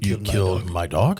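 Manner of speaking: dog lifted with a rising, question-like tone. Redoing a movie line wrongly on purpose: said as a question. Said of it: "it's not a question".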